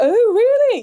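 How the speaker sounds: put-on plummy posh voice, very high. Retelling how new acquaintances react on hearing she works in classical music, put-on posh voice. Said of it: "they might start putting on a posh voice and they go".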